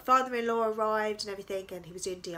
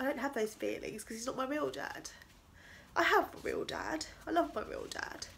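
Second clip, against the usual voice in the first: crying, tearful voice while speaking; 4 semitones higher, 5 dB quieter than usual. Speaker opening up about family, crying while speaking. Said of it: "I didn't mean to cry like this".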